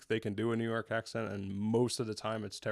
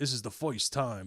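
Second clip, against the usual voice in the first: put-on old-school, old-timey New York accent. Showing how a word sounds: old-school New York accent. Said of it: "old school New York accent".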